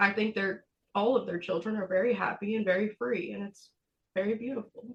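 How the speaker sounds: crying through the words, voice breaking. Sharing a personal perspective in conversation, the speaker is crying. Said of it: "Sorry to cry".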